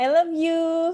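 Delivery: tender, very high voice. A coach demonstrates a declaration to a loved one, heartfelt and loving. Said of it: "dengan intonasi yang menunjukkan bahwa Anda benar-benar mencintai".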